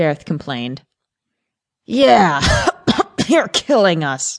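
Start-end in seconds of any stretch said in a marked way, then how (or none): 1.9-4.4 spluttering through coughs, pitched much higher. Narrator reads a character complaining about a woman's cigarette smoke, coughing while speaking. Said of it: "coughed Arthur".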